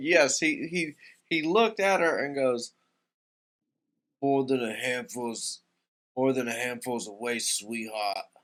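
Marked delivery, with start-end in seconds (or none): 4.2-8.2 put-on borrowed New Yorker accent. Retelling what David said to a woman, in David's New Yorker accent. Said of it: "he said it in like this this like New Yorker accent".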